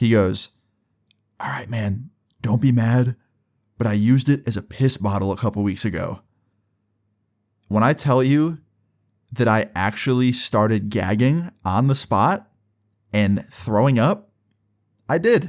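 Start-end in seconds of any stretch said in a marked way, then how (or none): 1.4-6.2 acted-out whisper. Retelling how he leaned in and whispered to the group, retelling a whisper. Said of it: "he whispers to us".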